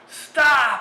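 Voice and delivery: screaming at top of lungs, high and loud.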